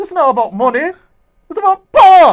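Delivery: very loud, high-pitched, bad Jamaican accent. Retelling a film villain's line to an upside-down victim: worst Jamaican accent. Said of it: "my worst Jamaican accent".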